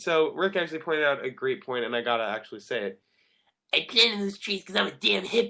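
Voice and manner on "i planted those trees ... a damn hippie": put-on high, bratty, spoiled cartoon boy voice. Wrapping up today's show, answer Rick's great point with your best Eric Cartman impression. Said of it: "That was my best Eric Cartman impression".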